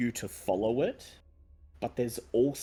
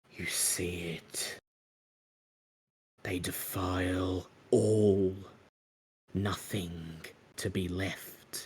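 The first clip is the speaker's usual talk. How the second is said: close whisper, much lower; 4 semitones lower than usual. At a defiled memorial stone, a voice whispers in the listener's ear: whispering in your ear. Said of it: "a voice whispers in your ear".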